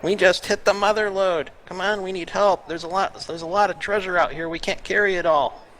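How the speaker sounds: very high-pitched, loud yell. Tabletop player speaking in Goblin to lure a goblin out, yelling into the tower. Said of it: "I'm going to yell into the tower".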